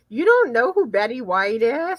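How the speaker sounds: ordinary talk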